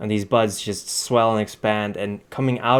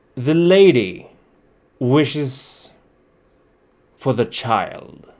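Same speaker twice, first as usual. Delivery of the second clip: very slow, hollow, echoing voice; 4 semitones higher, 4 dB louder than usual. Voicing an unseen figure in rusted armor demanding the child: echoing voice from inside armor. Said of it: "you hear the voice of whoever's inside, which is echoing quite a bit".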